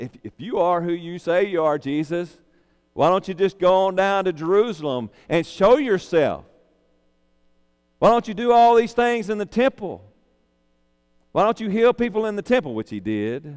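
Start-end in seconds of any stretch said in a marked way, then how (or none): 0.0-12.7 loud, pitched-up, sarcastic taunting tone. Retelling how the brothers taunted Jesus: imitating sarcastic brothers. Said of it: "So they were being sarcastic".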